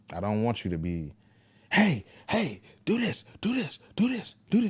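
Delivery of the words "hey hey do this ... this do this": very high, shrill, loud, nonstop yelling. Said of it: "conditioned to yelling".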